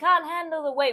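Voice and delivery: screaming cry, pitched high. Joking about being strong in the womb, imitating mum screaming. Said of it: "was like screaming".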